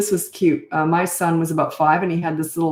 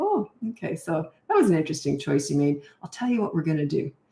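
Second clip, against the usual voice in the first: very quiet, calm, emotionless hushed voice; 5 dB quieter than usual. Parent shows how they talk when disciplining a child, very quiet and calm. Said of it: "whenever I'm disciplining, I get very quiet".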